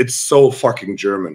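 ordinary delivery

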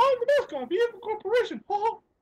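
squeaked out at very high pitch. Showing off impressions he can do: Mickey Mouse voice. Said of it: "I could do Mickey Mouse".

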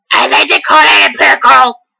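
put-on grim reaper character voice. In a video, one host keeps playing the Grim Reaper, Grim Reaper voice. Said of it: "That just sounds weird".

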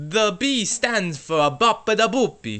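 phony, put-on Italian accent. A pizza shop character answers a customer's question, fake italian accent. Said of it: "That is the fakest Italian accent I've ever heard".

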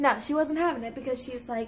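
normal talking voice

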